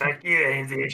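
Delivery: put-on animated cartoon character voice. Imitating how another speaker sounded moments ago: Cartman voice. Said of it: "I thought he turned into Cartman there".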